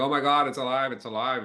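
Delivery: put-on frightened child's panicked, screaming cry. Retelling a scared ten-year-old's reaction to a robot: imitating a screaming child. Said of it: "went back screaming, going".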